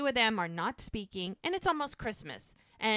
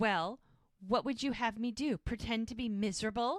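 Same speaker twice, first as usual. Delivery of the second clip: smug, complacent, self-satisfied tone. Recapping a family argument as the dad replies: imitating the smug dad. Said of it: "the dad gets all smug".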